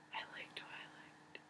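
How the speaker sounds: acted soft whisper. Speaker shows her bookshelf, whispering like Amy Beth. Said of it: "I'm whispering like Amy".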